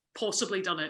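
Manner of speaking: ordinary delivery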